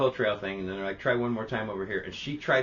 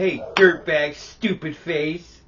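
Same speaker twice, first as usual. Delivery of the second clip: furious, very loud, very slow angry yell; 6 semitones higher, 9 dB louder than usual. Retelling what someone said to a bird, in a mock-angry outburst. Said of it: "he was angry at that thing".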